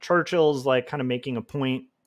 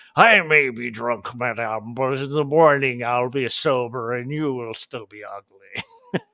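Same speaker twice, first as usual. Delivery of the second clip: put-on old British gentleman drinking voice; 4 dB louder than usual. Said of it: "old British gentleman drinking voice".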